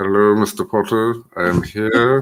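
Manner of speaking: deep villain voice. Teaching those watching how to do the voice, Severus Snape impression. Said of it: "I can teach you how to do it".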